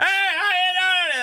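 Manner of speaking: big-guy voice, high, slow and shouted.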